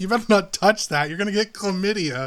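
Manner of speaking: high, called-out shout. Retelling a warning shouted near a fountain: imitating Wolf shouting. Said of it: "And she shouts it".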